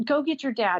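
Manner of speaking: mock, mild half-shouted yell. Retelling a man yelling at the speaker: retelling a yell. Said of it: "he's yelling at me to get my dad".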